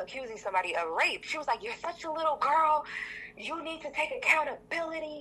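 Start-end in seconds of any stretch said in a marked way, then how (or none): 1.6-5.2 mock shrieking, high and screaming. Speaker retelling a woman insulting them during an argument, retelling a scream. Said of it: "And she's screaming".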